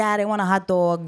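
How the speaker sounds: put-on Yonkers New York accent. Recalling childhood speech to dad, in the old Yonkers-style accent. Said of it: "I had spoke like that".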